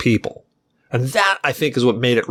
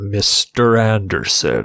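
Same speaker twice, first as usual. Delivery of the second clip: low, creepy voice that swoops up and down; 4 semitones lower than usual. Praising an actor in a film discussion, quoting his line in Hugo Weaving's monotone creepy voice. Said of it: "he's got that very monotone, very creepy voice".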